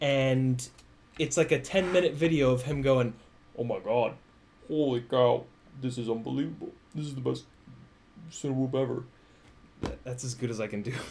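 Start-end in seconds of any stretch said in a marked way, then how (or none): 3.6-9.0 voice dropped as low as possible, deep. Acting out Jet's reaction to flying the drone, imitating Jet's low voice. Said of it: "It's just as low as I can make my voice".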